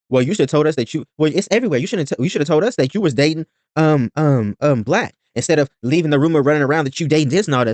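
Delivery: normal talking voice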